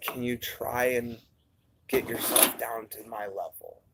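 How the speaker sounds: imitated low tone. Retelling what a woman said over the phone, imitating a low voice. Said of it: "how low the tone of my voice is".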